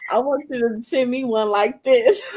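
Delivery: high voice, laughing through the words.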